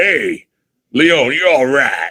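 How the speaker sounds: low voice, very slow, every word stretched.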